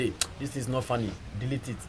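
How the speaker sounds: ordinary delivery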